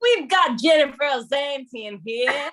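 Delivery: bad put-on Australian accent. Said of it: "Neither of us should ever attempt that".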